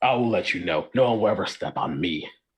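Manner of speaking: grouchy, grumbling tiny frog voice. Tiny character told they could get stepped on, grumbling. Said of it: "He grumbles".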